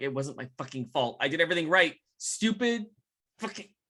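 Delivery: muttered under the breath, barely audible. Playing a character who has walked into chaos: cursing under his breath. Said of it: "he's gonna curse under his breath".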